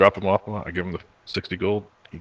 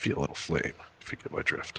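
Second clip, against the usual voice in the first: put-on whisper, lower and quieter; 4 semitones lower, 8 dB quieter than usual. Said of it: "I'll whisper real close".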